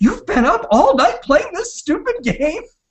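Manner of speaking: mock furious scolding, very high-pitched. Retelling how a mother found them gaming all night: imitating an angry mom. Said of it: "she got so mad".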